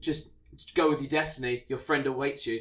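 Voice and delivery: ordinary talk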